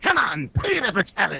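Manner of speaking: put-on energetic cartoon voice. Comparing Joker impressions, doing Mark Hamill's Joker: Mark Hamill's Joker voice. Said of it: "Mark Hamill's Joker ... he's like".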